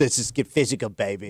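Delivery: put-on British accent. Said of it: "Why is [name] British?".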